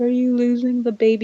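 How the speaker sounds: put-on sad child voice. Retelling the son's question after he heard a howl: imitating Sequoia's sad question. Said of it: "And he was so sad about it".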